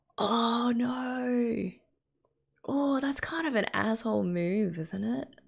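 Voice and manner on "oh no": shocked gasp, gasping oh, drawn-out no. Reacting while watching a show, gasping.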